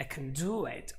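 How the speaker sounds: main stress falls on "do". Explaining emphasis on the action word, main stress on do. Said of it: "all the emphasis is on the word do".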